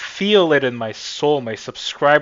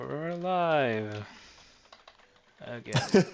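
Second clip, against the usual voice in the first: unexcited, no-energy, drawn-out delivery; 8 dB quieter than usual. Announcing the stream is live again, unenthusiastic. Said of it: "you said it so, like, unenthusiastic".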